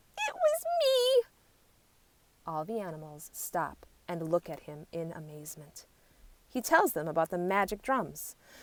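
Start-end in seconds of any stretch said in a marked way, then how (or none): 0.1-1.2 thin, very high-pitched squeaky voice. Reading a story aloud, a small warthog cries out: squeaky voice crying out. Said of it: "in a squeaky voice".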